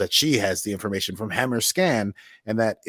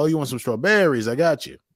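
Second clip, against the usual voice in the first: put-on Brooklyn accent in a higher voice; 5 semitones higher than usual. Imitating a grocery store clerk in Brooklyn: imitating a Brooklyn accent. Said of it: "go to any grocery store in Brooklyn and they'll be like".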